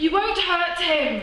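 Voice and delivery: put-on defiant child's voice, pitched very high.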